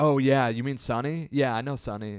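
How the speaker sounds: mocking, pretentious know-it-all voice. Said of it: "and he was like".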